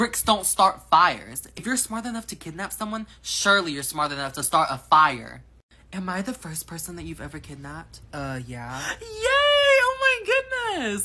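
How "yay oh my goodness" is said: delighted, gleeful, very high-pitched, long drawn-out "my". A kidnap victim learns they are the kidnapper's first, happy and gleeful. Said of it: "Why are you happy?".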